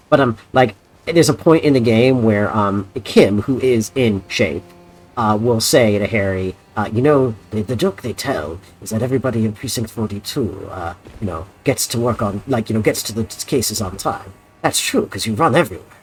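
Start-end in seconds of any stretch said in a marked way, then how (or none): 6.9-15.7 terrible put-on Belgian accent. Quoting a game character's line to another speaker: terrible belgian accent. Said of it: "that's a terrible Belgian accent".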